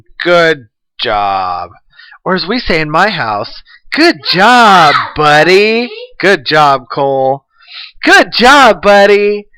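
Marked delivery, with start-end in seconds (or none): 3.9-9.4 condescending, insincere, drawn-out and high-pitched. Saying good job the way the speaker's mom does, mock-condescending good job. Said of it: "condescending tone of saying good job".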